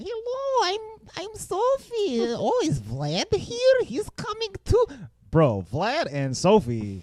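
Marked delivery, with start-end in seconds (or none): 0.0-4.9 put-on very high, sing-song Russian accent. Retelling a movie scene, imitating Sophie's Russian accent. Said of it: "Sophie's got a, a Russian accent in this movie".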